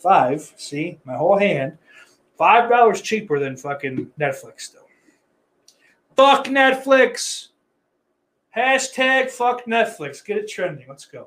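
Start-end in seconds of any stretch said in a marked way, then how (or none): 6.2-10.2 high-pitched ranting yell, loud. Comparing streaming prices, the speaker yells. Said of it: "Was I just yelling for like a half hour".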